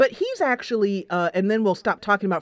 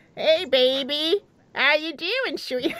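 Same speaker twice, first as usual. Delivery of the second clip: high sexy parrot voice; 6 semitones higher than usual. Joking about a game promise, sweet-talking in a sexy parrot voice. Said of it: "sweet talk you in a sexy parrot voice".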